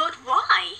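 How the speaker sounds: voice cracking. Voicing a character asking why: voice cracking. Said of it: "Can I not voice crack when I say".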